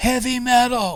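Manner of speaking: high, drawn-out yelling from a crowd. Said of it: "two or three people would yell out".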